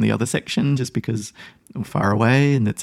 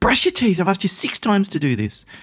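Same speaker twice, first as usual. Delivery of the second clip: rushed, fast, loud, shrill, aggressive delivery; 9 semitones higher than usual. A parent demonstrates slipping into aggression with their son: high, loud and fast. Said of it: "High tone of voice, high volume, and fast speed".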